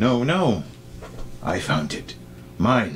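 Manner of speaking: pleading troll voice, swooping pitch. Narrating a scene, voice the other troll in the argument: pleading troll voice. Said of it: "the other one is pleading".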